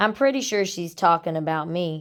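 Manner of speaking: plain reading voice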